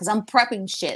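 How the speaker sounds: put-on heavy, thick Jersey Italian accent. Retelling a recorded phone call, the speaker quotes the pizza worker in a heavy Jersey Italian accent. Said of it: "cursing him out in his heavy Italian, like Jersey Italian accent".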